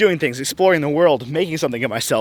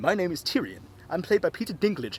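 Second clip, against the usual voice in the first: poor put-on British accent, quieter; 11 dB quieter than usual. Acting out a scene as Tyrion: poor British accent as Tyrion. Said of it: "I have a very poor British accent".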